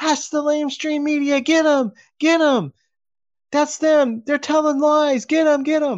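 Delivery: mock, very high-pitched, rousing yell. Retelling how a woman stirred a crowd against the media: retelling a yell. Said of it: "started yelling".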